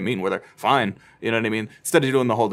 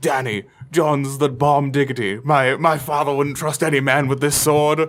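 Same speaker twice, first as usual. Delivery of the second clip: playful, put-on character voice; 4 semitones higher, 4 dB louder than usual. Acting out a guessed scene: Jorah impression. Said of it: "Is that your best Ian Glenn impression?".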